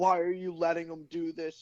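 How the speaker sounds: acted, scolding, accusing yell. Retelling a mom complaining about a kid's toy boat: imitating someone yelling. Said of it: "literally, like, yelling at me".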